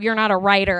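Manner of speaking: ordinary talk, nothing marked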